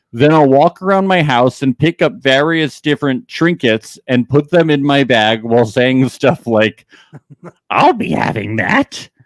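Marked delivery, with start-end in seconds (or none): 7.8-9.1 put-on maniacal goblin creature voice. Describing picking up trinkets around the house, goblin voice. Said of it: "laughing maniacally in my goblin voice".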